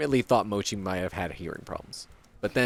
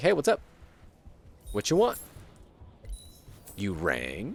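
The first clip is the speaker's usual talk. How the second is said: cat character voice; 5 dB quieter than usual. Speaker voices their cat, just woken in his cat tower, voicing the just-woken cat. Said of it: "So he's like".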